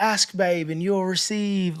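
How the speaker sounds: put-on clumsy, butchered English accent. Speaker retelling what Janet said when lending a charger: butchered English accent as Janet. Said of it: "I butchered your English accent".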